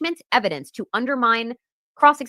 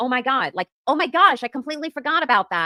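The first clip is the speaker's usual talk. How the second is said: feigned shock, like sudden realization; 3 semitones higher than usual. Imagining a witness's flustered answer on the stand: Jen McCabe, mock shocked. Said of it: "Jen McCabe should have been like".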